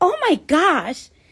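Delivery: put-on girl's voice with Staten Island accent. Retelling her OB-GYN's reaction during a sonogram, imitating a Staten Island girl.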